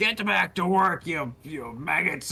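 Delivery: high, yelling, shouted devil voice. Describing a scene, the narrator voices a Spinagon whipping slaves: Spinagon shouting. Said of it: "And he's shouting".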